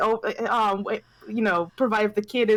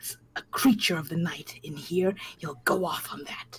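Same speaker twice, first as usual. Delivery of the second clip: hissed venomous whisper, lower and quieter; 5 semitones lower, 6 dB quieter than usual. Voicing a character about a paranoid burgomaster near guards: whispering with venom. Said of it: "whispers with, but, you know, with, like, vile in her voice".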